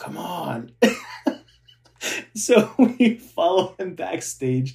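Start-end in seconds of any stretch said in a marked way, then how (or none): 0.0-0.7 soft, beckoning voice. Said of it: "he's like".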